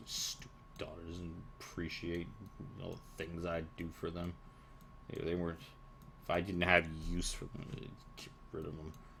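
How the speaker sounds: muttering under breath. Voicing a hag grumbling about her daughters: muttering under her breath. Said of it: "muttering under her breath a little bit".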